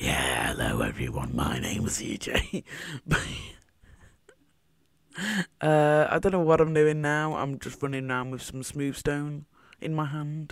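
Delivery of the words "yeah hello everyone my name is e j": suddenly much lower, strange put-on voice. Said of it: "my voice just suddenly went like".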